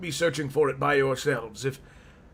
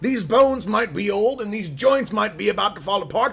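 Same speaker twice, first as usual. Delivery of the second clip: put-on loud, high-pitched, indignant old man yell. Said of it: "Sorry, I didn't mean to yell".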